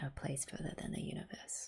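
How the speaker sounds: soft whisper, very quiet and hushed. Reacting to a sad scene, whispering.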